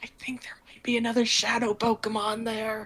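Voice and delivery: softly whispered speech. Turning to the group during a game scene and whispering. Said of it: "turn around and whisper to the group".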